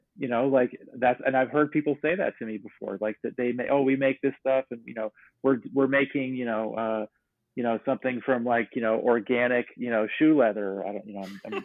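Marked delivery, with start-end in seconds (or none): none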